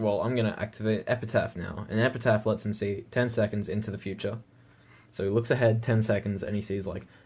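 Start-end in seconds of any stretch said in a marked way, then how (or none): none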